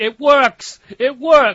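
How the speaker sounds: high, very loud, very slow, drawn-out scream. Speaker retells a Gundam-loving co-host's reaction: imitating a co-host screaming. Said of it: "he was screaming".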